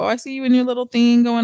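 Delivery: snide, backhanded, passive-aggressive tone. Imitating people who hide a diss in a compliment: imitating a sneaky diss. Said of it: "them sneak dissing hater ass people".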